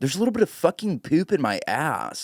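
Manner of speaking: put-on a little bit of Valley girl voice. Showing a friend how funny William is every time he talks, in William's Valley girl voice. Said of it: "It's Valley. It's a little Valley girl".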